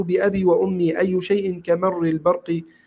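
plain

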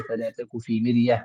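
ordinary delivery

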